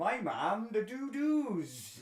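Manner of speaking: put-on very thick Welsh accent, high-pitched. Quoting Auntie Simone about her mum, in a very thick Welsh accent. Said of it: "in a very thick Welsh accent say".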